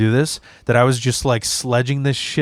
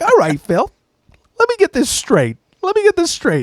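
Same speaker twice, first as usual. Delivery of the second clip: very high, strangled, swooping, raging angry voice; 3 dB louder than usual. Retelling a man's angry reaction to him, imitating a high-pitched angry voice. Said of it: "he'd always get high pitched when he's angry".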